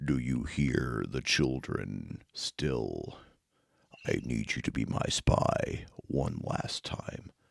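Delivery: very deep, rough, slow, deliberate low voice. Quoting a villain from a show: Vecna voice. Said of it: "Vecna's kind of like Agent Smith from The Matrix down a couple octaves".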